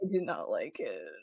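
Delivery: low, quiet, dismissive tone. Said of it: "And Drew is like".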